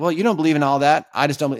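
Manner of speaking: snarky, smug, sarcastic tone. Acting out an argument called pseudo-intellectualism: imitating smug sarcasm. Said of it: "smug sarcasm of like".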